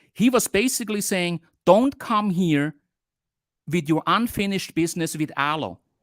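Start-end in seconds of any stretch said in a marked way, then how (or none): none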